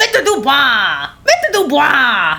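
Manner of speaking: high, slow, drawn-out mocking voice.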